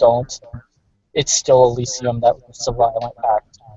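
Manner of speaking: hushed whisper, close to ear. Narrating a figure who puts a hand on the listener's shoulder, whispering. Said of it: "he whispers in your ear".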